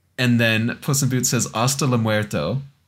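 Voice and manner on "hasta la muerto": ordinary talk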